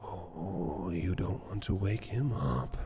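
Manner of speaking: hushed, soft half-whisper. The voice that has been following the players speaks to them; half-whisper. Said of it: "You hear that voice in a whisper".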